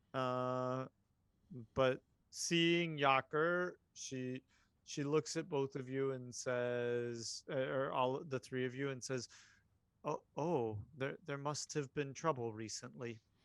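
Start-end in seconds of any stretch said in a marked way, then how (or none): 10.0-13.1 standoffish, very calm voice. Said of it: "her normal kind of meek, uh, not meek, standoffish, maybe, very calm".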